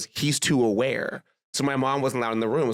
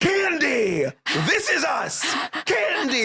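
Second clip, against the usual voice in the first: acted very high, slow, swooping, drawn-out scream; 14 semitones higher than usual. Recalling friends yelling Heads Up clues at her ex-boyfriend: retelling a scream. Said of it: "we're all screaming at him like".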